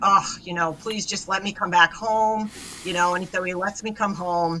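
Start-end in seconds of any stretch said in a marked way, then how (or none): 0.0-2.5 earnest, pleading, begging tone. Retelling begging a husband in the car to come home: retelling own begging. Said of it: "begging him".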